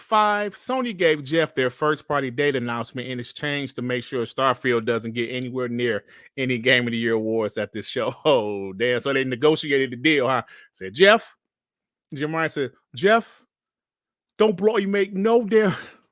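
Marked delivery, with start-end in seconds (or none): 12.9-15.7 loud, bad, abysmal British accent, pitched high. Joking that Sony made a deal with Jeff, in a bad Jim Ryan impression. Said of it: "My British accent is abysmal".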